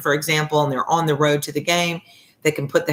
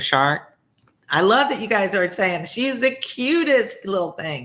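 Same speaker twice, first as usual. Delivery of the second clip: ordinary talk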